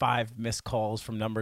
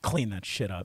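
mock-angry, put-on angry tone. Retelling what the girl he was dating told him, imitating an angry girlfriend. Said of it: "She was so mad at me".

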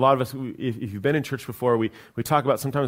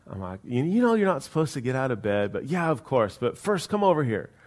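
normal talking voice

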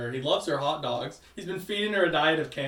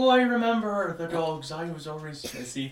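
subtle put-on Irish accent, older man voice; 2 semitones higher than usual. Describing a movie, quoting an older man telling fun facts about dogs: irish accent impression. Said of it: "subtle Irish accent".

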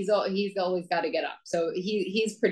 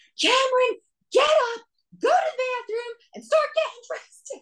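mock shrill, very high, loud yell; 5 dB louder than usual. Recounting calling Cameron for the fifth time this morning; retelling a scream. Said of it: "I literally screamed".

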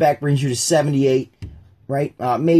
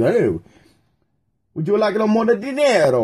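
put-on Italian-sounding accent, pitched up; 6 semitones higher than usual. Acting out what spain says, in an accent that comes out italian. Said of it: "that was more Italian".

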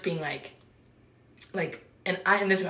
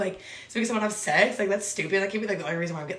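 normal talking voice

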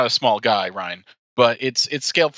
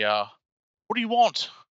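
younger male voice, much higher, slower; 10 semitones higher, 3 dB quieter than usual. Game narrator voicing someone answering a knock at a dark house, younger male voice. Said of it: "kind of a younger voice".

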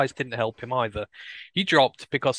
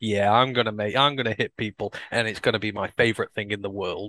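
acted offhand, breezy, unbothered delivery; 3 semitones lower than usual. Imitating him talking about getting to hit people: imitating a nonchalant tone. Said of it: "it's just so nonchalant. He's just like".

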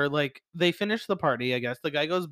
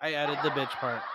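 ordinary talk, nothing marked

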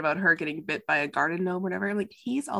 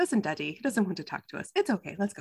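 soft, gentle, tender voice. Quoting what she told Daddy, imitating someone speaking gently. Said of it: "she says it so gently".

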